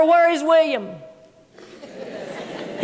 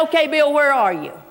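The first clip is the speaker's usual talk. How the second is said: plain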